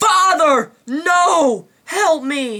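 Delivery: bad, acted-out agonised cry, very high, slow, drawn out. Describing a movie scene, imitating Luke Skywalker: bad impression screaming in agony. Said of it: "I know that was a bad impression".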